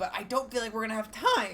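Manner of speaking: voice breaking mid-sentence, cracking up high. Playing a strategy game, a player doubts there is time, voice cracking. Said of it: "that was a ridiculous voice crack".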